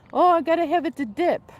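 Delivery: slight put-on Mexican accent, high and loud. Speaker retells how Sal answered her about his tortillas, in Sal's Mexican accent. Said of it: "He would say in his little Mexican accent".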